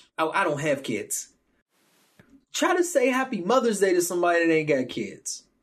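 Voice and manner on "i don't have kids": mock brash, self-assured, proud and bold. Quoting how people say it boldly, a mock-bold, proud declaration. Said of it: "They be saying that shit bold than a motherfucker".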